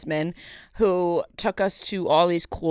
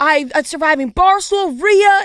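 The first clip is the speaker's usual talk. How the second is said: frantic, freaked-out voice, higher and louder; 10 semitones higher, 5 dB louder than usual. Retelling how an owner recognized them: imitating owner going crazy. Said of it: "He was going crazy".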